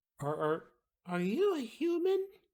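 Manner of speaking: put-on very high, swooping, wondering tiny little-girl voice. Voicing a little girl who tugs on a player's pants: voicing a little girl. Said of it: "little girl".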